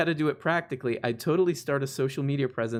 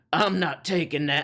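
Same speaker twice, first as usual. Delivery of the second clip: playful, put-on Southern accent; 2 semitones higher than usual. Imitating people who refuse a treatment: Southern voice. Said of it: "the Southern voice 'cause it's fun".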